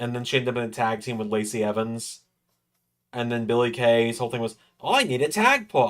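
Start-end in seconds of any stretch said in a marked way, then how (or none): 4.8-5.9 high-pitched put-on Australian accent. Imitating a wrestler's catchphrase in a put-on australian accent. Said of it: "Ten out of ten Australian accent".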